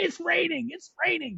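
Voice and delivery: mock very high, shrill scream. Acting out cheering on a leading driver: imitating own screaming. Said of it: "I was gonna be screaming".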